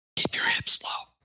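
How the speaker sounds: hushed, intimate, close-up whisper. Acting out a coaching bit, leaning close to a player: whispering in someone's ear. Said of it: "I whisper in your ear and I go".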